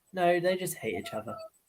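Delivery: very casual, breezy, offhand throwaway delivery. Repeating another speaker's words back to them: imitating a very casual tone. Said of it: "the way you said that was very casual".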